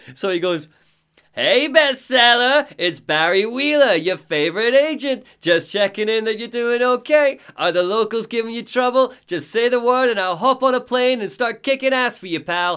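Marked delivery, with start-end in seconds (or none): 1.3-12.7 put-on very high-pitched New York accent. Acting out the agent's phone intro, in Barry Wheeler's New York accent. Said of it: "to hear the New York accent".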